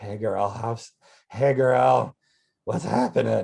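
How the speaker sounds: loopy, crazy, drawn-out dragging voice. Acting out a comic superhero trapped in mayonnaise: loopy crazy Mass Grape voice. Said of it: "He should be, like, kind of loopy and crazy".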